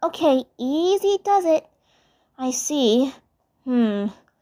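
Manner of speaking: careful, concerned, high-pitched and slow. Reading a story, Blossom bandages Zim's wounds; Blossom, cautiously concerned. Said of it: "cautiously concerned".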